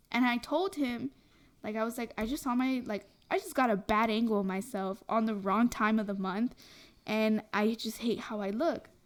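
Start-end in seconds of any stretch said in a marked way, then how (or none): none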